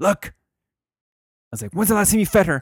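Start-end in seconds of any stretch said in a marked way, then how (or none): 1.7-2.6 mock furious, angry screaming shout, higher and louder. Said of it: "Just screaming at her, all pissed off".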